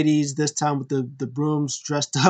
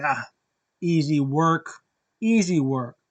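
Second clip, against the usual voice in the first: mock smug, self-assured, cocky, offhand swagger. Retelling Kenny Omega starting the match: imitating Kenny Omega sounding cocky. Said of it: "he's all cocky".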